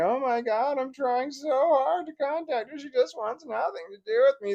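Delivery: very high, sobbing, whiny crying. Imitating the ex-wife crying to her family: mock crying. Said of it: "just crying a river to her family".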